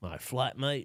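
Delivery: accidental-sounding Australian accent. Trying a uk phrase that comes out: accidental put-on australian accent. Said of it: "that sounded Australian".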